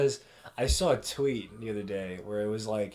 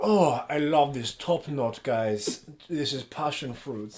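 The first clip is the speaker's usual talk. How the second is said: put-on German accent; 3 semitones higher than usual. Describing videos seen on TikTok: Jeremy Fragrance impression. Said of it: "Jeremy Fragrance, and he's like".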